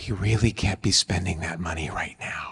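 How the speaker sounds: low, calm, intense whispered voice.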